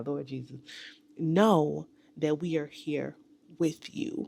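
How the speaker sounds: choked-up, teary voice, near crying. Wishing the online community a happy New Year, speak about to cry. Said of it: "I'm about to cry".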